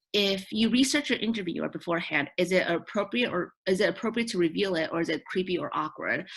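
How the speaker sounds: plain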